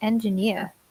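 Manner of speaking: engineer with stress on final syllable neer. Explaining where the word's stress falls: stress on neer in engineer. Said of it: "it should be the end".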